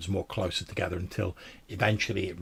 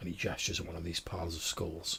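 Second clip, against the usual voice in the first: usual speaking voice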